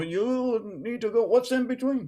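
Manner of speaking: put-on German accent, stretched "you". Recounting how a challenger kept pushing the group, in a German accent. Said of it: "It has this German accent".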